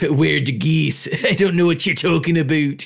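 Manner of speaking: put-on heaviest Canadian accent, laid on thick. Mimicking the actors in a show about a goose attack: thick Canadian accent. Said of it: "It's just the thickest Canadian accents they have too".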